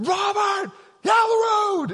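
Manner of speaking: very high, long, drawn-out yell. Recounting crossing a bridge, the speaker retells friends' warning yell from behind. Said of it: "yelling like that".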